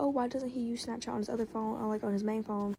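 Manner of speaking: usual speaking voice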